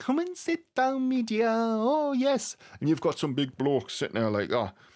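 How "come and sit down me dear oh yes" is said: very high, slow, eerie put-on woman's voice. Mimicking that kind of person for listeners, in a creepy female voice. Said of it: "this is me creepy female voice".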